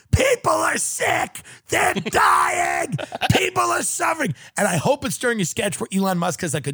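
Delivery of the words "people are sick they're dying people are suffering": very high, wild, shrill screaming with swooping pitch. Imagining audience members standing up in the SNL studio; acting out audience screaming. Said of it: "standing up and screaming".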